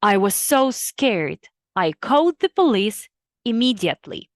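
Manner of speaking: ordinary delivery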